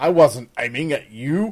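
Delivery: loud, contemptuous, scornful sneering tone. The pistolier answers an accusation of attempted murder, sneering.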